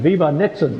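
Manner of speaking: toned-down, put-on cheering yell. Retelling what a young helper shouted at the pit: imitating someone yelling. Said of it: "he started yelling".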